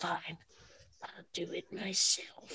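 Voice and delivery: whispered, weak-sounding villain voice. Retelling a story and likening a character's moment to Thanos, in a bad Josh Brolin voice. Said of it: "that was my Josh Brolin voice".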